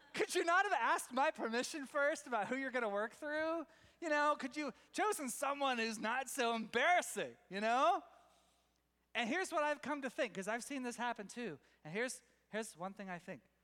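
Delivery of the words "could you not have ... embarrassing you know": high, loud, exasperated tone. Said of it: "you're like".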